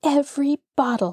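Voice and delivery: small whispering voice. Narrator reads a little girl's words as Granny hears them, in a whispering little voice. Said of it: "in a whispering little voice".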